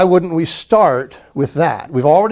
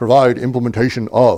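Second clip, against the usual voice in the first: formal delivery with the voice brought lower; 5 semitones lower than usual. Speaker demonstrates formal speech, repeating a phrase: formal lowered voice. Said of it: "because I'm speaking formally now".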